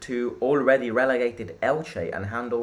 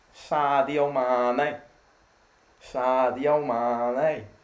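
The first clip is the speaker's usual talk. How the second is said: very slow Liverpool Scouse accent, one word stretched long. Asked to do a british accent, saying a footballer's name, scouse accent. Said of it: "Scouse accent".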